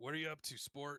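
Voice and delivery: gruff, slightly high-pitched character voice. In a role-play, a character speaks up to the group: Corbus's gruff voice. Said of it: "Corbus's gruff voice kind of takes over".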